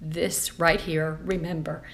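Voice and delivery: plain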